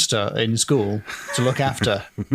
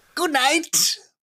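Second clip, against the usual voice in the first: very high, taunting, mocking, insincere sarcastic tone. Retelling the demon's farewell during the story, imitating a mocking good night. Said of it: "a merely mocking good night".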